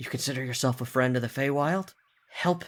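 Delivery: whispered voice. The narrator voices the axe speaking into a player's mind, as a whisper. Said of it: "you hear like a whisper in your brain".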